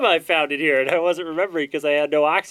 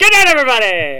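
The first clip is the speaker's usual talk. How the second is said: booming, shrill, all-out very loud shout; 8 semitones higher, 7 dB louder than usual. After the others goad him to say it, delivering it as a very loud shout. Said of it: "That was so loud".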